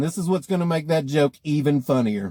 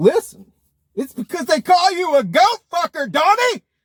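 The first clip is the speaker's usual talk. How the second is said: shrill, very high, pissed-off, angry blurted outburst; 14 semitones higher, 4 dB louder than usual. Retelling a joke, acting out a character who gets pissed: imitating an angry friend. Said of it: "Jason just gets pissed".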